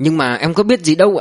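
plain reading voice

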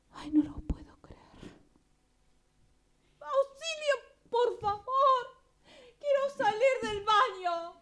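distressed, high, loud, desperate pleading cry. Stuck behind a bathroom door, she begs to get out: distressed plea. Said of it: "Tranquila, tranquila".

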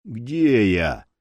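husky, rasping voice. Boul, finally coming to, speaks up in a hoarse voice. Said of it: "сиплый голос Боула".

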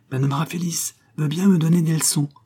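panting, broken-up words. Geneviève, having just run up the stairs, brings her news, breathless with halting words. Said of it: "à mots entrecoupés et en haletant".

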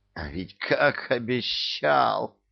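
angry hiss, spitting the words out. A woman advancing on a frightened ruler; hissing. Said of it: "прошипела кисонька".

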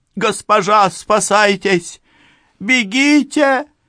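very high, shrill, pained, desperate scream. A stabbed servant warns her mistress to flee, screaming with last strength. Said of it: "Из последних сил прокричала несчастная".

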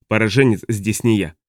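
ordinary delivery

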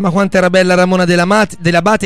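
normal talking voice

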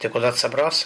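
plain reading voice

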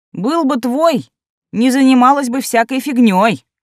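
high, scornful, contemptuous scoff. A woman answering another woman's shriek, scornful snort. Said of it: "хмыкнула презрительно".

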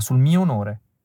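ordinary delivery

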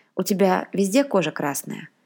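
ordinary delivery

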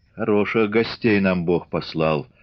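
plain reading voice

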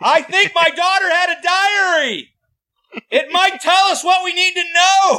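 very high-pitched, loud shout. Retelling a father's words at a funeral in a movie: imitating someone shouting. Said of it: "why are you shouting this at a funeral?".

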